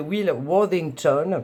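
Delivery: name said in a put-on English accent. Speaker introduces the illustrator of her tarot decks, saying his name in an english accent. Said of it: "avec l'accent anglais, s'il vous plaît".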